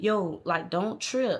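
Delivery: careful, slow, drawn-out, voiced stage whisper. Retelling being woken at night in the room: imitating someone half-whispering. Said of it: "He was whispering".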